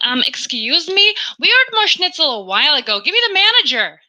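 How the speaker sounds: high-pitched, entitled complaining tone. Acting out a pupil complaining at the dinner table: imitating a Karen-like child. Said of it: "I sent them back a Karen".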